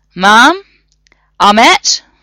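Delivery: loud calling out, projected across distance. John calls to a sleeping woman, with a raised voice. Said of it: "He raised his voice".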